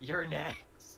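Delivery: small, squeaky little voice in a tiny high-pitched scream. Player describing their turn screams at the last one in a tiny high-pitched voice. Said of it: "I just scream at the last one in this tiny high pitched voice".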